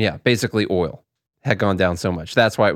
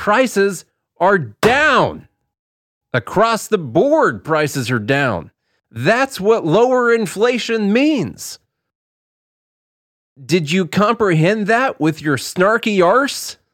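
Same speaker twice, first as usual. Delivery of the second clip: mock yelling, voice pitched way up, shrill; 12 semitones higher, 3 dB louder than usual. Retelling how she yells at him about prices, imitating her yelling. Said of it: "She yells at me".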